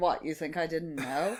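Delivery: cheeky, sassy, knowing tone. Retelling a scene, quoting Stan's reply: sassy Stan voice. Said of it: "he's so sassy".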